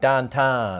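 'town' in 'downtown' said like 'tan', Pittsburgh vowel. Explaining how Pittsburghers say town, Pittsburgh vowel in downtown. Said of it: "people from Pittsburgh pronounce the vowel sound in town like tan, like downtown".

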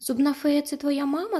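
eager, hopeful, high-pitched voice. She asks the plush lion a question: hopeful question. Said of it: "запитала Аня з надією".

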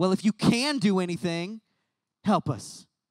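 put-on sarcastic, frustrated, snarky tone. Retelling a desperate father's plea to Jesus: imitating a sarcastic, frustrated plea. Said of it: "that's a little too sarcastic and snarky".

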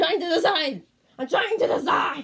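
mock exasperated yell, high, loud and exaggerated.

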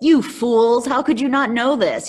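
harsh, judgmental scolding. Explaining a passage, acting out one possible reading in a judgy way. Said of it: "read this passage in a very sort of judgy way".

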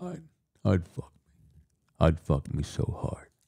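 slow, breathy, nearly whispered delivery. Describing a film scene, imitating Buffalo Bill putting on lipstick. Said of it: "Buffalo Bill's like, he's putting on his lipstick".

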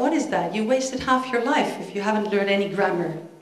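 ordinary talk, nothing marked

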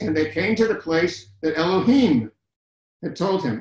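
ordinary delivery

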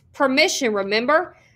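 plain

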